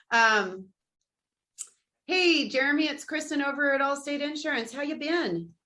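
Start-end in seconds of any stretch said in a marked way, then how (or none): 2.0-5.4 relaxed, chatty, casual, easygoing voice. Reading the casual version of an insurance call script, casual. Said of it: "you want me to be casual".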